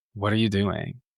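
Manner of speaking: very judgmental, disapproving tone. Recalling mom catching them putting gel in their hair, mock-judgmental tone. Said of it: "with this very judgmental tone was like".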